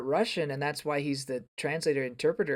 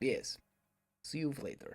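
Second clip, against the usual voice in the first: put-on Russian accent, quieter; 10 dB quieter than usual. Saying goodbye at the end of an episode: attempted Russian accent. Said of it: "And that was an accent".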